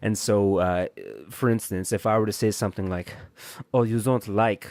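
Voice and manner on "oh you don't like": put-on German accent. Giving an example line to explain a term, in a Max Kruger German accent. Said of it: "a German accent".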